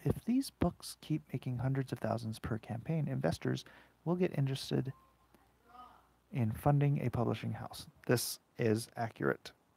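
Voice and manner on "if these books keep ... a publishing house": soft, gentle, soothing, calming voice. Talking to viewers while inking Cyberfrog, in a soft, soothing voice. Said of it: "Back into my soft, soothing voice".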